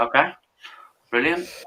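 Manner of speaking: let-down, deflated, disappointed tone, a touch high. Replying after learning someone else gets the slot: disappointed tone. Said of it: "Don't sound so disappointed".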